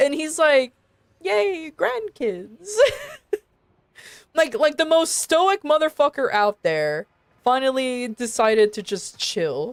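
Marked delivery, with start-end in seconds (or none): 1.2-2.8 put-on delighted, cheerful grandpa voice, pitched up. Describing how he finally decided to chill, in a put-on happy old grandpa voice. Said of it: "he sounds like an actual grandpa".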